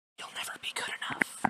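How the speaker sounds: soft, hushed whisper under the breath. Acting out whispers heard from everywhere, whispered. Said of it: "I did whisper it".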